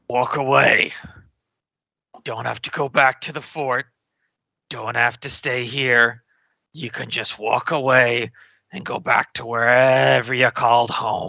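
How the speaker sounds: words forced out through gritted, clenched teeth. Tabletop player speaking in character to a guard, through clenched teeth. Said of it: "through clenched teeth".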